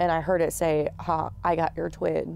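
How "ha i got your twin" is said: put-on whisper. Retelling a voice heard in the ear at night: imitating a whisper. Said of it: "I heard a whisper in my ear".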